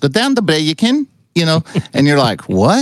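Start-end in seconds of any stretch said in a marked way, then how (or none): 0.0-1.6 rapid put-on Scottish accent, much higher pitch. Speaker imitates how the Scots give directions, in a fast Scottish accent. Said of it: "So it's that fast".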